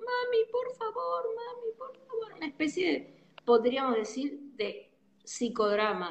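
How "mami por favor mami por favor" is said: put-on very high, small-child calling voice. Speaker describing reliving childhood anger by calling to mom: small child's voice. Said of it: "la vas a llamar a mamá con voz de nene".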